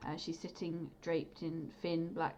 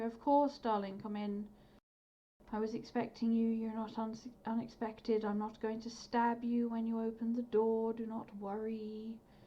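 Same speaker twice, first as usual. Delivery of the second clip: haughty, superior, condescending, pitched-up delivery; 5 semitones higher, 3 dB louder than usual. Narrating a scene, voicing the woman who answers the visitors at her door, haughty voice. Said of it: "a very sort of haughty voice come back".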